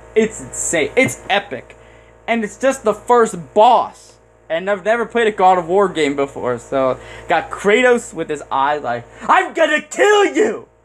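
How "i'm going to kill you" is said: mock scream pitched way high. Describing a God of War boss fight, screaming as Kratos. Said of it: "Because I think he always screams".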